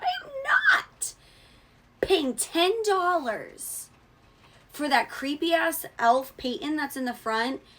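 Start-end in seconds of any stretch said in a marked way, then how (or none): 0.0-5.8 voice cracking as it climbs, swooping. Ranting to viewers about a creepy elf figure: voice cracking as it goes up. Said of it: "my voice is cracking as it goes up".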